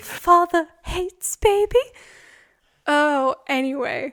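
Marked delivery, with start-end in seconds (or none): 0.0-1.8 put-on very loud, high, sad Victorian child voice. Speaking for the pet cat as a sad Victorian child.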